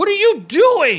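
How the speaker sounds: high, loud, slow panicked yell.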